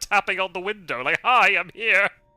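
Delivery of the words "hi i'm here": loud, mocking, teasing, taunting tone. Acting out a villain tapping on a care home window: taunting. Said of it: "he goes and taunts him".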